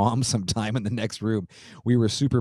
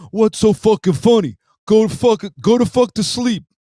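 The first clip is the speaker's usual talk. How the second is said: put-on New Jersey mobster accent, higher, louder; 13 semitones higher, 10 dB louder than usual. Retelling a man bursting in on two laughing brothers, in a Sopranos accent. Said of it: "as good as I get with the Sopranos accent".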